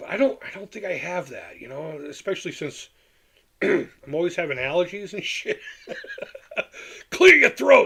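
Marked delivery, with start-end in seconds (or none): 7.1-7.9 high, loud, slow mocking voice with laughter. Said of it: "That was one of the complaints I got".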